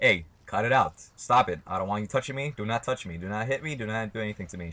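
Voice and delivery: play-acted firm, very stern, no-nonsense tone. Retelling telling someone to stop touching: imitating own stern warning. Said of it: "I told her very sternly".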